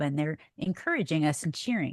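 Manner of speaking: ordinary talk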